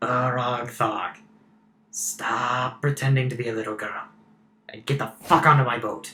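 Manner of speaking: voice right in the ear. In a tabletop game, a character speaks behind the player's character: voice right in your ear. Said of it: "there's a voice over your shoulder, in your ear".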